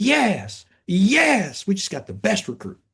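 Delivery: elated, very high, very slow, drawn-out "yes" cries. Retelling a coach running down the tunnel shouting about a recruit: excited Avery Johnson impression. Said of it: "And he was so excited".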